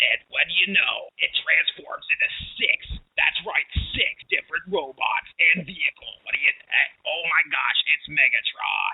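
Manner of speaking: put-on tv commercial announcer voice. Retelling an old toy ad: Transformers commercial announcer voice. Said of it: "that guy that does the commercials for the Transformers".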